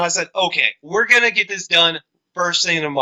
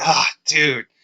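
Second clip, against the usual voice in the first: mock-relieved, in a lower voice; 4 semitones lower than usual. Retelling how he turned around when called angrily: imitating his relief. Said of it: "he's just relieved again".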